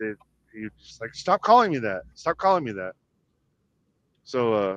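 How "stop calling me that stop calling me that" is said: mad, embarrassed, angry voice. Retelling how a group teased someone with a nickname, the speaker quotes him: mock angry. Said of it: "he got mad about that".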